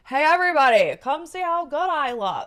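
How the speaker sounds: very loud, high, abrasive bellowing broadcaster voice. Mocking someone who broadcasts opinions: loud Ron Burgundy voice. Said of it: "that loud voice".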